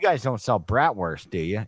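put-on loud, heavy, thick, laid-on Chicago accent. Retelling what they asked when they went in there, in a heavy chicago accent. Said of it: "I just had a Chicago accent the whole time".

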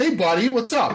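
brash back-slapping buddy tone. Imitating a friend coming over to slap someone's back: abrasive Tom impression. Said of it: "that abrasive kind of".

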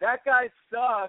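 shrill, very high yell. Retelling how a girl in a crowd yelled out: imitating a girl yelling. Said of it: "this one girl yelled out".

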